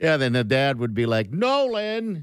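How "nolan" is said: high-pitched yell. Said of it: "He'd be yelling".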